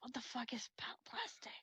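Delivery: near-whisper. Playing a character who has never seen plastic before, kind of whispering. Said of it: "she kind of whispers".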